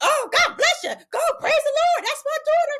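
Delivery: very high, loud, proud yelling.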